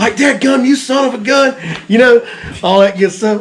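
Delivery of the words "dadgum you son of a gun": put-on, drawn-out, high, full-tilt coach-like cussing scream. Retelling coaching a first-time fisherman to land a fish: retelling own screaming. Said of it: "I'm basically screaming at the guy now".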